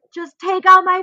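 high, loud scream. Retelling an unmedicated clot removal: imitating own screaming bloody murder. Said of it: "I'm screaming, like, bloody murder".

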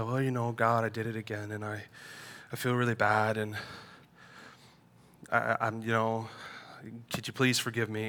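barely audible, very quiet mumbling. Imitating own prayer when confessing sins to god: imitating own mumbled confession. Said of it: "I mumble over it and I say".

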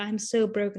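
put-on, overly dramatic voice. Retelling a show scene of Clayton rubbing his temples in church: imitating Clayton being dramatic. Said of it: "You were so dramatic".

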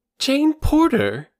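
very high-pitched, surprised exclamation. A girl hears a man mention her friend's family; exclaiming. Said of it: "exclaimed the girl".

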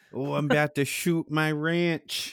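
mock midwestern accent. Joking about how Midwesterners talk, in a mock Midwest accent. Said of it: "that fucking Midwest accent".

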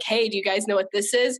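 plain

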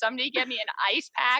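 tearful voice. Retelling sitting in the hallway after new admits: retelling own crying. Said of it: "crying by myself".

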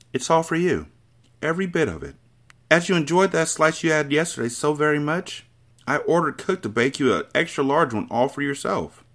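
soft, persuasive voice. The Trunchbull offers the boy a cake, soft, persuasive, gentle. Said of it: "her voice became soft, persuasive, even gentle".

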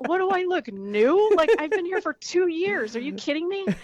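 put-on indignant, incredulous tone. Retelling own reply after being asked about a first hardcore show: imitating offended self. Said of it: "And I was so offended".

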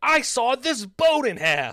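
very high, loud yelling. Speaker describes the pitchman screaming at the camera: imitating Phil Swift yelling. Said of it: "Phil Swift really yells when he's like".

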